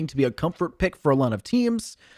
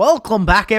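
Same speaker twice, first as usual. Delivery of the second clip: loud, bad, failed put-on Scottish accent; 5 semitones higher, 7 dB louder than usual. Opening the broadcast in a put-on voice: bad put-on Scottish accent. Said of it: "I can't do a Scottish accent".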